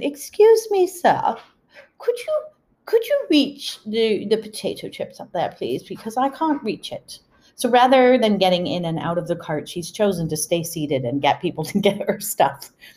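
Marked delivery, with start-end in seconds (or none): 0.0-7.2 put-on sing-song, pitched-up, lilting English accent. Retelling a seated woman asking the speaker for help, imitating her English accent. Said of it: "in her English accent".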